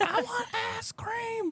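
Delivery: put-on shrill, very high child's scream. Retelling a small kid at a McDonald's demanding ice cream: imitating a kid screaming. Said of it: "Screaming it".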